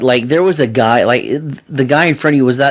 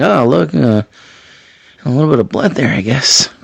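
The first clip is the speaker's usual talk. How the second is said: mock, low-key, undersold, offhand, underwhelmed commentary. Comparing two commentators' reactions to a bloody cut, imitating Chris Corey underselling. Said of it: "He undersold this on commentary so bad".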